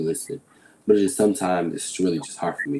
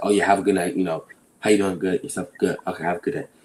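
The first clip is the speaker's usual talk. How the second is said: hurried, fast, rattled-off, dismissive delivery. Acting out how they rush a conversation to end it: imitating himself rushing a conversation. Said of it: "I might rush a conversation so it could be over".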